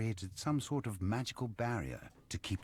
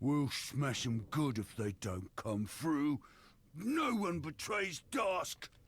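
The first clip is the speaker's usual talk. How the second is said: grunting brute troll voice, pitched up; 7 semitones higher than usual. Narrator voices the troll replying to the hobgoblin; grunting troll voice. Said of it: "The troll grunts his reply".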